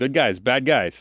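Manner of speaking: put-on tough-guy cool with cocky attitude. Imitating how a character says the line, imitating a cool guy attitude. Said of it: "putting on this, like, kind of, like, this cool guy attitude".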